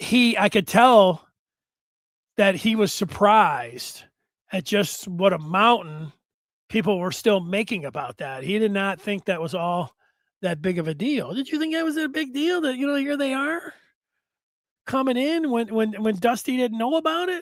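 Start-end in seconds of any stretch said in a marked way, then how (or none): 11.3-17.4 high, put-on voice for talking to a pet dog. Asking about the rivalry, the speaker slips into the dog voice. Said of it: "that's my dog voice".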